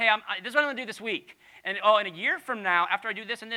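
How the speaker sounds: eager, bragging, high-pitched, loud, fast rant.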